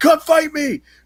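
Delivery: very high-pitched mock monster voice, roaring. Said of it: "he just roars and he's like".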